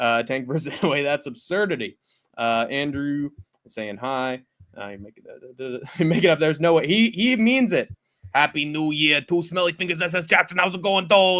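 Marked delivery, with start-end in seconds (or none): 8.3-11.4 put-on Boston accent. Reading out a commenter's message, imitating Tank's Boston accent. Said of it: "don't think you need to do his accent".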